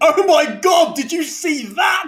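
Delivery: put-on very high, stretched-out, drawn-out shriek. Retelling a wrestler getting up after a drop kick, imitating a scream. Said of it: "he screamed".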